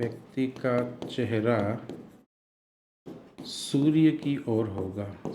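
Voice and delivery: slow dictating pace with long pauses.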